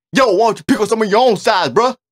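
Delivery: very high, loud, forceful yell. Speaker demonstrates how you have to yell at coyotes: forceful shout. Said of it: "You gotta be like that, bro".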